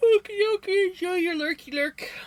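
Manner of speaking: speaking through a yawn. A streamer tells a lurker to enjoy lurking, yawning while talking. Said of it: "I'm yawning".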